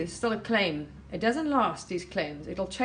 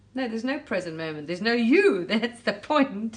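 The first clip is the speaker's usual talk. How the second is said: loud, chuckling and laughing through the words; 2 semitones higher, 5 dB louder than usual. A speaker addresses listeners, laughing while talking. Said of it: "Sorry if I'm laughing".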